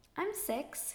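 timid. The narrator's little sister answers a lady's question after him, shyly. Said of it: "my sister shyly said".

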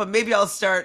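ordinary talk, nothing marked

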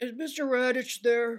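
high voice trying and failing to sound manly. Retelling a prank phone call scene: imitating Annie's deepest man voice. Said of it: "uses her deepest man voice".

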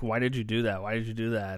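plain

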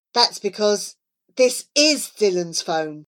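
plain reading voice

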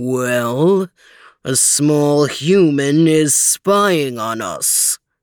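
menacing low growl, very slow and drawn out. A huge grizzly bear rears up and calls to a watching human: growled. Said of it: "he growled".

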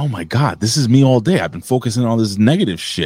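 ordinary delivery

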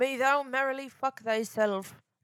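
Irish-accented speech. Repeating the phrase again, slipping into an irish accent. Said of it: "I turned Brit or yeah. Irish again".

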